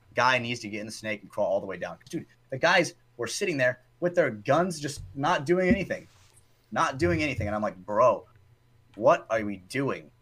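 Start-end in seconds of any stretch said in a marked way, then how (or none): 2.1-10.0 angry, heated, fired-up rant. Describing the guys sitting there with their guns doing nothing, angry. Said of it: "you sound angry as fuck right now".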